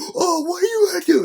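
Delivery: imitated yell. Retelling how a man got in his face: imitating someone yelling. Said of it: "And he's yelling".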